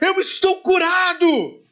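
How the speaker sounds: high-pitched, ringing, very high shout. Telling the brothers how a third person in the empty stadium began shouting; retelling a shout. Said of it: "uma terceira pessoa começou a gritar".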